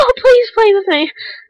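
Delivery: very high, pleading dog voice.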